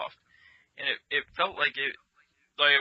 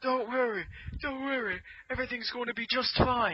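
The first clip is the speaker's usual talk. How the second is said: clumsy put-on British accent, very high-pitched; 10 semitones higher, 3 dB quieter than usual. Retelling what the British guy said on the ride: bad British accent. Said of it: "I can't do a British accent".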